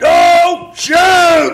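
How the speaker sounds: very high, loud, all-out hollering shout. Recounting being arrested, re-enacting hollering as loud as he could. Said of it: "as loud as I could with my big boy voice, I hollered".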